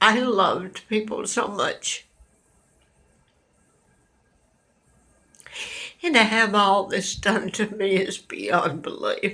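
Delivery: crying through every word. Telling listeners why they are crying, crying. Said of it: "why I'm crying".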